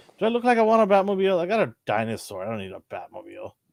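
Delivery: high, fast, mock indignant scoffing dinosaur voice. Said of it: "Nate's like".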